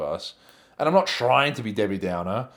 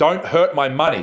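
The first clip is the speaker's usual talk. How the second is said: sudden, alarmed, high, loud yelled-out cry; 5 semitones higher, 7 dB louder than usual. Retelling what was yelled during a match: retelling own yell. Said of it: "I yelled out".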